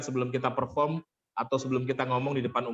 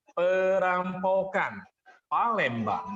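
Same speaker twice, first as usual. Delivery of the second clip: perampokan stretched slow and high. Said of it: "pressure atau tekanan kepada kata yang menjadi poin penting".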